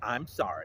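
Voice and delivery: sarcastic, insincere tone, not meant at all. Retelling how Miss DeVoe apologized: imitating a sarcastic apology. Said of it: "said in a sarcastic way".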